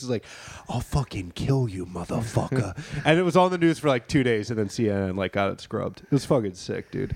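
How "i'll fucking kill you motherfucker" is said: put-on New York accent, slower pace. Retelling what Chris Cuomo said in a man's face, Chris Cuomo New York voice. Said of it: "Like doing like New York voice".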